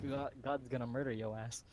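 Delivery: plain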